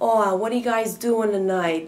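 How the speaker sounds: put-on very loud, overdone Yankee Northern accent. Southern schoolmates teasing a northerner, mock-exaggerated northern speech. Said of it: "they like emphasize".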